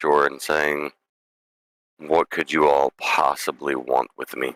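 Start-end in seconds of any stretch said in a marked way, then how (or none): 2.0-4.6 tired and angry dragon voice. Voicing a dragon rising from a river at the players: tired and angry dragon voice. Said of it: "a very tired and angry dragon".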